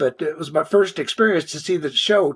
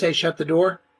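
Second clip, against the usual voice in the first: ordinary talk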